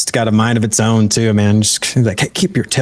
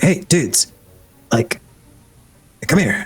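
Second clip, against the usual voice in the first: high, hushed whisper; 5 semitones higher than usual. Narrator voicing a character who whispers to two players, whispering. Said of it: "he whispers to kind of both of you guys".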